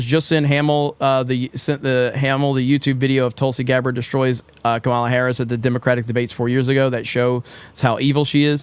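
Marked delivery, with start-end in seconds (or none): none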